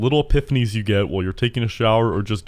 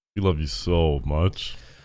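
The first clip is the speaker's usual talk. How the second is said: mock affectionate, sarcastic, lower and quieter; 6 semitones lower, 4 dB quieter than usual. Telling another speaker to stay, over their refusals: sarcastic. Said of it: "I feel like there's some sarcasm here".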